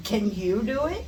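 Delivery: mocking, needling, sarcastic poking tone. Showing question intonation when somebody is poking you: sarcastic questioning intonation. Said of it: "If it's a sarcastic question and somebody's poking you, ... You would just put the intonation".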